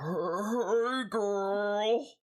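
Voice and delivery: rough, otherworldly voice. Speaker voices a woman greeting someone: gruff alien voice. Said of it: "in this kind of like just gruff like alien voice".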